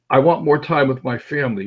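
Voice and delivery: ordinary delivery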